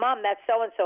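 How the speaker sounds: ordinary delivery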